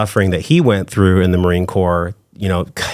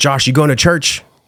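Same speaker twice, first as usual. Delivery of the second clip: higher-pitched, commanding army general voice; 7 semitones higher than usual. Retelling a question from a grandfather: brigadier general voice. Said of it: "with a, like, a brigadier general voice".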